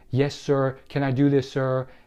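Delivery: ordinary talk, nothing marked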